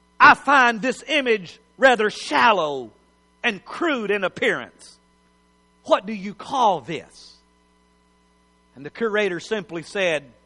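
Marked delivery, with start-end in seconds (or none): 0.2-7.3 mock snooty, condescending high-society lady voice, disdainful. Retelling a woman speaking to a curator about a piece of art, mock-condescending. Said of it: "said to the curator very condescendingly".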